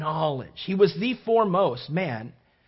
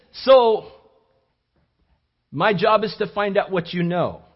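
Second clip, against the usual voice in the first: loud, fake European accent in lecturer style; 3 semitones higher, 6 dB louder than usual. Retelling what a visiting Swiss speaker told a Bible College class, put-on European accent. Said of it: "That's my European accent".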